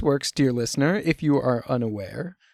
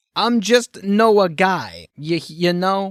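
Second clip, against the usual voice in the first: slow, bad put-on gangster-style Italian accent; 4 semitones higher, 4 dB louder than usual. Playing noah the mob hitman, trying a bad italian accent. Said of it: "I don't know if I can do a bad Italian accent, but we'll find out".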